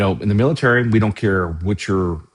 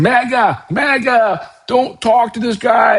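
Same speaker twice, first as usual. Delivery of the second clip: put-on, very high, drawn-out, slow, loud angry yelling; 5 dB louder than usual. Retelling a woman at a protest who turned on him, imitating her yelling. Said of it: "she started yelling like".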